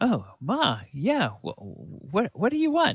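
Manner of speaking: very high, sugary, sing-song sweet innocent voice. Voicing a kid who knows he's in trouble with Ma: sweet innocent voice, caught child. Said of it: "but I'm gonna be as sweet as I can possibly be".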